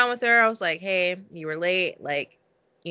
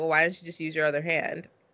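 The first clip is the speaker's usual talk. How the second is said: put-on, fast, stone-cold, dead-level deadpan; 4 dB quieter than usual. Speaker retelling what she said to a woman, trying to act tough: retelling a stone-cold deadpan. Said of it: "I said it like very stone cold face".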